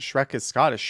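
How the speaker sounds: normal talking voice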